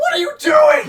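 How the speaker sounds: high, loud, furious shout.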